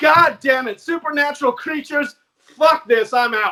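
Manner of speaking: loud, fed-up outburst. Retelling the same CIA officer's reaction in his tone: imitating the CIA guy's fed-up tone. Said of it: "in that tone where he's just like".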